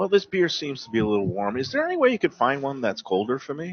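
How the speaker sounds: polite, courteous, mannerly, considerate nice tone. Role-playing a restaurant guest who politely calls the waiter: acting a polite good guest. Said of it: "I'll pretend that we just got the beer".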